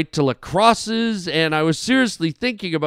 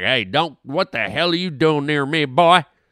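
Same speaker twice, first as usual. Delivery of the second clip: put-on ornery, aggressive cottonmouth snake voice; 2 semitones lower than usual. Acting out a cottonmouth snake lunging at someone: voicing an ornery cottonmouth snake. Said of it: "The cottonmouth apparently just like".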